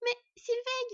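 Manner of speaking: shrill, very high. Skad, a fox, protests when her sister tells her to let it go; protesting. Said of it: "protesta la renarde aux yeux bleus".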